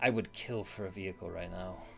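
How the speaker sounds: low, very hushed mutter under the breath. Voicing a character complaining as rain starts: muttering under breath. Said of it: "under his breath".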